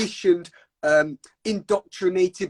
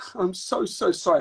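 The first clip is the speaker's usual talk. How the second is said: acted-out weepy voice, tearful, speaking through tears. Retelling how a participant started crying and apologized: imitating someone crying. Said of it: "starts crying and she's like".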